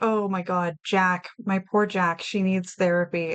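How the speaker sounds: ordinary delivery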